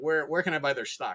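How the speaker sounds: ordinary talk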